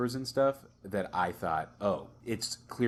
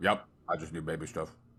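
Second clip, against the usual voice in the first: gruff, off-putting man's voice; 3 semitones lower than usual. Retelling how a man answered a lady, imitating a gruff man. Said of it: "he's very he's very gruff".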